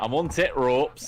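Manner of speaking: put-on Yorkshire accent. Teasing a friend whose accent slipped, the speaker repeats the friend's line: put-on yorkshire accent. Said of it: "You went from Irish to fucking Yorkshire".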